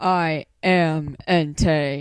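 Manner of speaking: very low, pushed-down, loud booming voice. Doing Pokémon voices one after another, Entei voice, very low. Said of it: "I can't get my voice to go down that low".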